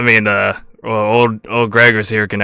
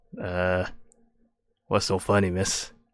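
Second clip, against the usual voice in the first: put-on hesitant, halting old-man voice, much lower and quieter; 2 semitones lower, 11 dB quieter than usual. Game master voicing a man at the bar as a grinning halfling sits beside him, hesitant older man voice. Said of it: "and he is an older man, and it he's wearing like uh this like blue jumpsuit, / and he is an older man, and it he's wearing like uh this like blue jumpsuit, and it, he looks like an, an H V A C worker".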